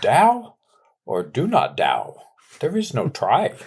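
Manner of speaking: slow, drawn-out character voice with swooping pitch. Imagining what an absent person would say in his best impression: Yoda voice. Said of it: "in his best Yoda voice".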